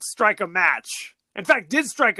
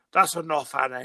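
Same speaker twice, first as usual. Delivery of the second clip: put-on Irish accent; 4 semitones lower than usual. Recounting a film husband's occasional protest to his wife, in a Gabriel Byrne Irish accent. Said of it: "with his Irish accent".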